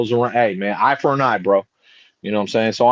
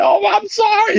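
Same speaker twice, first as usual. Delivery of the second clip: mock crying, whimpering and sobbing, very high-pitched. Retelling a video of a beaten thief on the floor: imitating someone crying. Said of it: "This dude is crying on the floor".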